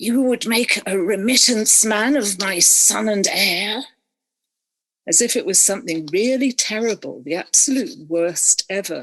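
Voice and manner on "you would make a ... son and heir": scandalised, venomous, outraged hiss through teeth. Retelling what the father said to her across the table, retelling a hissed line. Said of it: "and he hissed, he really hissed".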